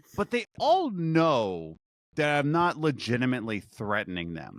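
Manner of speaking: ordinary delivery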